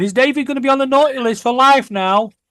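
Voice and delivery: very high, weepy, acted sobbing voice. Retelling what Amber said after the punches: imitating Amber crying. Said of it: "Amber crying and going".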